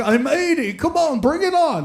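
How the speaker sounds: put-on Yiddish-inflected English accent.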